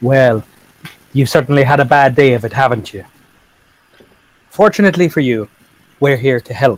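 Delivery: put-on Irish accent throughout. A player's character replies to a slurring stranger, in an Irish accent. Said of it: "But with an Irish accent".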